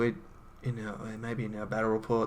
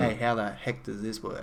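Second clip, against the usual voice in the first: plain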